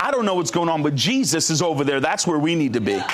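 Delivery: plain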